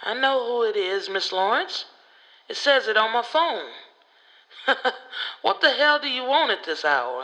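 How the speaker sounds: put-on raspy, gruff, grumpy old voice. A judge answers a phone call at nine at night, raspy old voice. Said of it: "Judge McCaskill? / That was the judge's style. He didn't do shit nicely. He was a bear to deal with, / Well, sir, / His voice was raspy and old, / Judge McCaskill? / His voice was raspy and old, / He".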